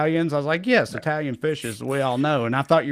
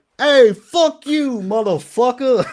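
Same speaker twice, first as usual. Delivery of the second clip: very high, loud, put-on New York Italian accent; 9 semitones higher, 6 dB louder than usual. Replaying an earlier voice for an imagined clip caption: put-on new york italian accent. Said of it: "me doing that guy's voice earlier".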